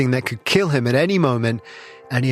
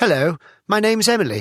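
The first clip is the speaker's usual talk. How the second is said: put-on perfectly posh upper-class English accent; 7 semitones higher than usual. Retelling someone's greeting in a remote village: perfectly posh English accent. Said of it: "in a perfectly posh English accent said".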